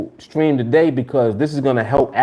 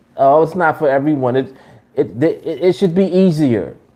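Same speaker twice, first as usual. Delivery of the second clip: normal talking voice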